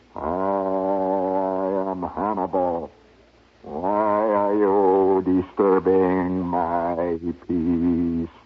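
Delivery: ghostly voice with a drawn-out "I". Telling a story where a voice comes out of the air conditioning: Hannibal's ghostly voice. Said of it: "out of the air conditioning comes a ghostly voice".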